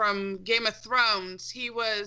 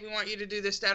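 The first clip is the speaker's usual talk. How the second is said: put-on deadpan voice, faster; 4 dB quieter than usual. Describing how Destiny characters handed out missions; deadpan Ikora impression. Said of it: "they were all deadpan about it".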